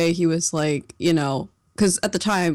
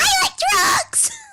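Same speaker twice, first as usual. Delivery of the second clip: put-on very high girlish shriek. Imagining a little girl's scream mixed into someone's voice, little girl scream. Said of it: "like a little girl pigtail screaming".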